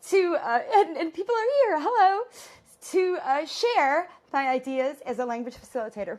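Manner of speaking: high, loud, choked-up emotional voice.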